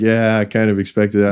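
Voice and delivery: ordinary talk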